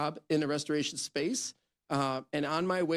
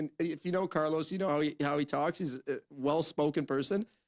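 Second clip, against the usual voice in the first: normal talking voice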